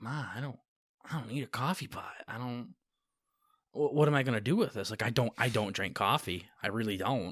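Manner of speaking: soft, hushed, half-whispered stage whisper. Retelling opening a gift beside mom: imitating a half-whisper. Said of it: "I whisper to her".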